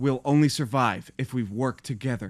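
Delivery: dead flat, colorless monotone. Complaining about a show's dialogue, mimicking how the Mandalorian talks: flat Mandalorian monotone. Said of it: "the most monotone".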